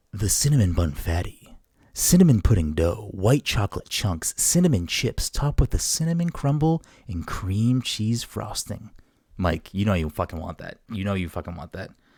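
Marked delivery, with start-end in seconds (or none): 0.1-8.9 public-radio announcer voice. Putting on a voice for a co-host as a demonstration, in an NPR voice. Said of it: "This is my N P R voice".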